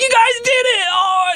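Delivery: very high, pumped-up burst of excitement. Retelling how the escape room owner burst into the room: imitating an excited, pumped-up owner. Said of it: "all excited and all pumped".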